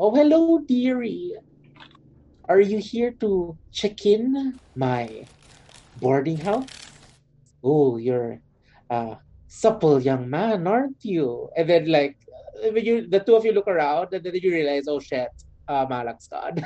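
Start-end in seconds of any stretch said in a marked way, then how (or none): 0.0-11.5 put-on high, sing-song old woman voice. Narrating a scene, the speaker voices an old woman greeting a visitor: old woman voice. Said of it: "an old woman go".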